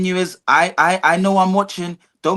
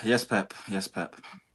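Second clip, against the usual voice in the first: very soft, quiet, mocking, sarcastic yes-man tone; 10 semitones lower, 12 dB quieter than usual. Answering another speaker's football argument: sarcastic. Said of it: "now you're being sarcastic".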